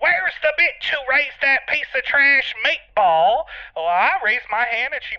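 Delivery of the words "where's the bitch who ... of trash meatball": put-on drunken drag queen yelling, shrill scream. Retelling how a drunk drag queen burst in: imitating a drunk queen screaming. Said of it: "She screamed".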